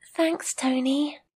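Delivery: not too happy. In a listening-exam dialogue, Jill thanks a classmate for congratulating her, unhappy. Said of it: "You don't sound too happy".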